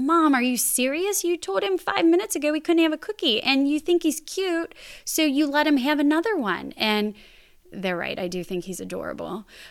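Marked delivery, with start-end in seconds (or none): 0.0-6.7 high-pitched mock yell of children. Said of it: "they'll yell at me and be like".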